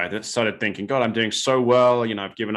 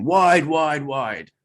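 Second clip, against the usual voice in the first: acted-out, high-pitched screaming; 5 semitones higher, 4 dB louder than usual. Rider retelling screaming at a goal judge, retelling a scream at the official. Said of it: "I'm screaming at him".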